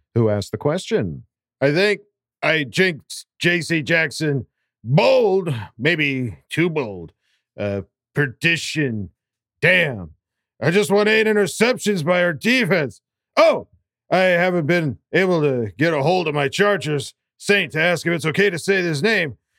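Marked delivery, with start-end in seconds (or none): 1.7-19.3 put-on drunk voice, pitched higher. Reading a listener's question as requested: imitating Thunder Alley Kevin drunk. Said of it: "Danny Lags asked for Thunder Alley Kevin drunk voice".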